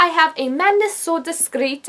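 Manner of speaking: put-on Scottish accent. Starting to go through a list of books, the speaker names the first in a scottish accent. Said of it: "I don't know why I said that in a Scottish accent".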